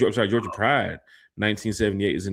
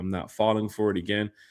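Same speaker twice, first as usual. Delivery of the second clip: ordinary talk, nothing marked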